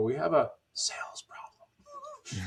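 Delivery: voice gone soft, very slow and drawn out. Describing inbound callers from his network, speaker imitates them: softened voice. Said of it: "their voice kind of softens".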